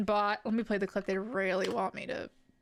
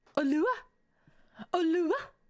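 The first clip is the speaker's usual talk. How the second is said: odd French-like lilt, higher pitch; 6 semitones higher, 4 dB louder than usual. Repeating a greeting word aloud with a weird French-sounding inflection. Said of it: "I put a weird inflection on it".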